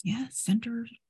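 high, hushed stage whisper. In a tabletop game, a character looks at a companion and answers in a stage whisper. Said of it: "kind of stage whispers".

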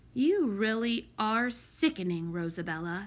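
plain

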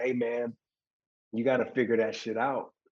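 blunt, aggressive yet loving, firm tone. Retelling what a stranger told him: imitating aggressive but loving tone. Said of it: "it was aggressive, but it came with love".

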